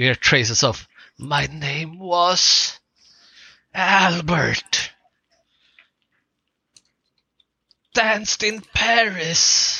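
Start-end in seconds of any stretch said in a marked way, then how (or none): 1.2-9.8 very slow, high, drawn-out, haunting ghostly wail. Voicing words carried on the strong wind: ghostly screaming voice. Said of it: "it's almost as if there is someone screaming".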